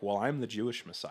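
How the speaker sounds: put-on sarcastic voice. Acting out Jesus answering a woman who asks for healing: sarcastic Jesus voice. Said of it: "this very sarcastic edge to his voice".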